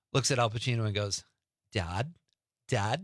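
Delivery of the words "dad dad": put-on best-effort California accent. Retell a film scene where she gets shot and looks at Al Pacino, Sofia Coppola in her best California accent. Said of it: "in her best California accent".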